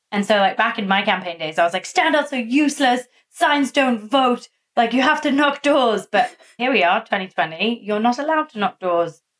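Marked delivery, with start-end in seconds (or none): 1.8-9.1 sudden, full-on strong Irish accent. Recalling campaign days, the speaker suddenly goes very Irish. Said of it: "you went very Irish there all of a sudden".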